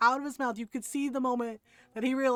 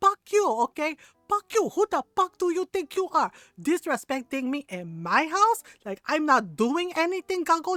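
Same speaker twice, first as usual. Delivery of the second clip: mock full-on loud, high-pitched yelling; 5 semitones higher, 5 dB louder than usual. Retelling mom scolding a brother she pulled off the couch: imitating mom yelling. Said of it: "and she's yelling".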